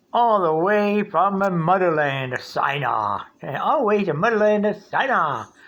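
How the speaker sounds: put-on native-sounding New York accent. Quoting how Eric O always says it, in a New York accent. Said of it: "That's a New York accent right there".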